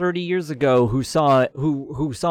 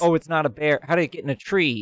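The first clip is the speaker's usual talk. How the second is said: plain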